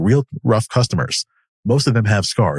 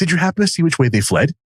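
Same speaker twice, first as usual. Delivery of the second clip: innocent, dim-witted, dopey high-pitched voice; 7 semitones higher than usual. Reading a story aloud, voicing the party's face: innocent dumbass voice. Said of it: "in the most, like, innocent, dumbass voice".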